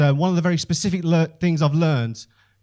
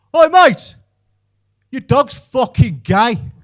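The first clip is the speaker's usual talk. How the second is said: very loud, high hollered shout; 9 semitones higher, 9 dB louder than usual. Telling of walking the dog when a passing driver yelled, imitating a man shouting. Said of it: "shouts out his window".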